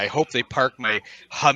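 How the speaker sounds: ordinary delivery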